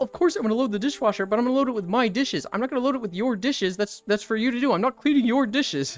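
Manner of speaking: puppet-style frog character voice. Retelling roommates arguing with puppets, as Kermit the Frog: Kermit the Frog voice. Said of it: "And Kermit the Frog will be like".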